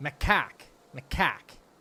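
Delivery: macaque said in a Boston accent. Asked to say a word with the boston accent, in boston accent. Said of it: "You got to say it with the Boston accent".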